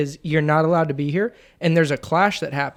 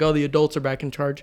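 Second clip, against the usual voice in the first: ordinary delivery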